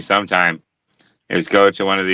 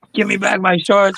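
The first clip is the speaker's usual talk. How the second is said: drawn-out high-pitched yell. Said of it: "fucking yelling at us".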